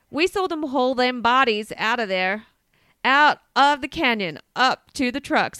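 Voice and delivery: loud, bad, fake American accent. Retelling what a man said he saw, in a terrible American accent. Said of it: "I have to do an American accent".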